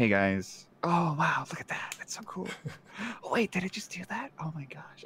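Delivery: close-mic streamer voice. A streamer redoes how they used to talk right up close to the mic. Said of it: "my stream really slow".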